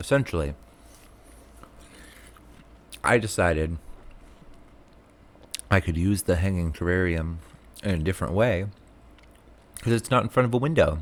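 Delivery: talking with something in mouth. Showing hanging terrariums on video, talking with a popsicle in mouth. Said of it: "I have a popsicle in my mouth".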